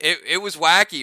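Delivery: ordinary talk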